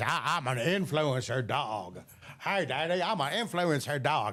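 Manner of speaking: put-on dog voice with a Texas accent. Speaker voices their shelter dog Molly on the show; Molly's Texas dog voice. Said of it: "that's just Molly's voice".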